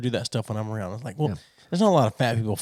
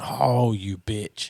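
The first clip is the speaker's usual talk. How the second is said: put-on irritated outburst. Retelling being stuck at a missed light: imitating own irritated curse. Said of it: "I said it with that tone".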